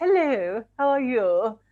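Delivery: put-on extra-posh voice. Speaker recalls their nan greeting the speaker's boyfriend, imitating nan's posh voice. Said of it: "my nan put on a very strange voice".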